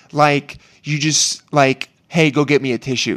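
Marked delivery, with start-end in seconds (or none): 2.0-3.1 mock casual, nonchalant cadence. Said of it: "that's how she said it".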